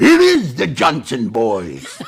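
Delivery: put-on acted old cowboy voice. Retelling a shootout scene with Duke, say the sidekick's line in a Walter Brennan voice. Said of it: "that was a Walter Brennan voice".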